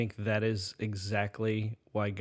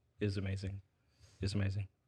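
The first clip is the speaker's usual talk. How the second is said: usual speaking voice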